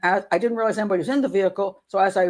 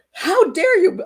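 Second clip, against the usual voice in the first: very high-pitched, loud, acted-out screech; 11 semitones higher, 5 dB louder than usual. Retelling what the angry woman said next: imitating a woman shrieking. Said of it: "She starts shrieking at me".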